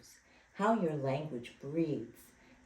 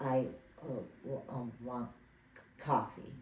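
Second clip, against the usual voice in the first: very slow, choppy, disconnected, flat monotone; 3 semitones lower, 3 dB quieter than usual. Illustrating what fear does to language, short, disconnected, flat delivery. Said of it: "Short, disconnected, flat, no music".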